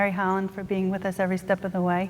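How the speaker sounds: very quiet, quick speech.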